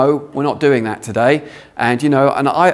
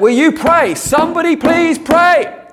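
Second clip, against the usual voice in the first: very high, pleading shout. Recalling shouting at the nurses when nothing was working, retelling own yell. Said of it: "I just yelled it out".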